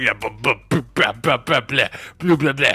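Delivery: put-on babbling, concussed-sounding speech in a French accent. Imitating Wemby coming out after halftime: Wemby concussed French accent. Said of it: "it's my concussed French accent".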